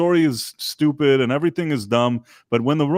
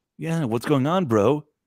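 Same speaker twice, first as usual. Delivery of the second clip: smug, douchey, laid-back bro voice. Imitating how Chris Hemsworth voices Optimus Prime: douchey Chris Hemsworth impression. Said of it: "Chris Hemsworth was like".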